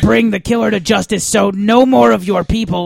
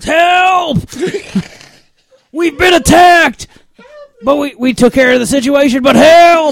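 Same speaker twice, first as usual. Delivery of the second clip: high, full-throated yell at the top of lungs; 7 semitones higher, 4 dB louder than usual. Yelling in character for help after an attack: yelling at the top of lungs. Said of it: "yell at the top of my lungs".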